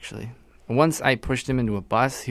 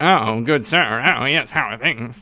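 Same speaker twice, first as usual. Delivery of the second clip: put-on 1920s-style early radio announcer voice; 4 dB louder than usual. Show hosts joking about the 20s, trying a 1920s radio voice. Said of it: "I can't do a 20s radio voice".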